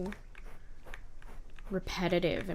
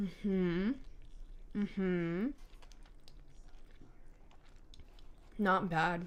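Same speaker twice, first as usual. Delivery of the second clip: speaking with mouth full, chewing; 3 dB quieter than usual. Eating a rice ball while playing a video game, talking while chewing. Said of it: "Sorry, I'm chewing".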